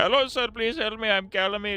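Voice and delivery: put-on slow, very high Indian accent. Voicing Calamite after talking about the Calamite fight: Calamite in an Indian accent. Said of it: "doing an Indian accent".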